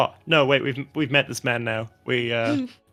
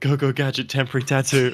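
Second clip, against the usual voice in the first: quiet mutter under her breath. Voicing a character casting a spell: muttered under her breath. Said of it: "under her breath, she says".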